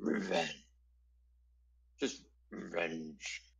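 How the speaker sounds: otherworldly, low, hushed, guttural voice. Game narrator voices a creature speaking to the players: supernatural guttural voice. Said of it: "in a very um, supernatural guttural voice".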